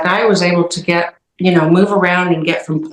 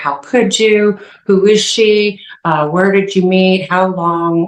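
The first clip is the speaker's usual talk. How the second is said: blurted, tumbling, unfiltered accusatory outburst. Retelling confronting a cheating partner: retelling blurted accusations. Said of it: "blurting out accusations like".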